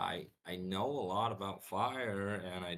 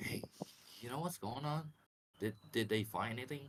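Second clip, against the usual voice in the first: hushed, half-whispered delivery; 4 semitones higher, 3 dB quieter than usual. Speaking in character to a companion during the game: half-whispering. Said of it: "whisper with, like, uh, Jackal".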